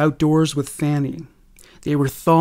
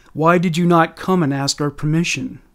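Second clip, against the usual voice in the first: plain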